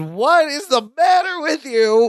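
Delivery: exasperated shouting outburst, high-pitched and slow. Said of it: "Larry is just exasperated".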